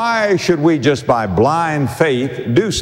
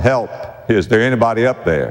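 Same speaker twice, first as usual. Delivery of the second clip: ordinary delivery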